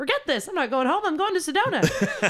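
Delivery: high, defiant, laughing outburst.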